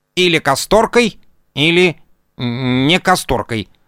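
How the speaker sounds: rasping, grating insect voice. Narrator reads the mantis outside the window answering the girl; grating mantis voice. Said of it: "проскрежетал за окном богомол".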